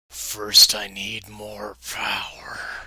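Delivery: slow, hushed whisper in a demon voice.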